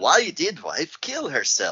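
botched, slow, drawn-out put-on voice, swinging up and down. Asking why the wife killed herself, in a VJ Emmy voice. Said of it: "that was a butcher of the voice. I was trying to do VJ Emmy".

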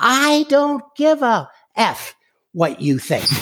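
very high, shrill yell at full lungs. Retelling what a guy yelled after being told they would leave, retelling a yell. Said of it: "at the top of his lungs, this guy yells".

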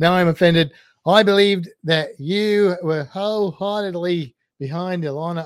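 bad Australian accent, loud and slow. Reading out a comment from Sean in a bad Australian accent. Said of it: "doesn't actually sound like the Australian accent".

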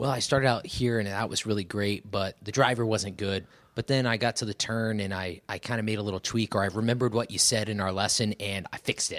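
normal talking voice

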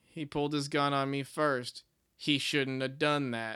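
dim-sounding, menacing deadpan, dead flat and slow.

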